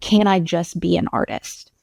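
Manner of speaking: put-on tearful, crying voice. Retelling what an artist said at lunch: imitating someone in tears. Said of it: "she's literally just in tears".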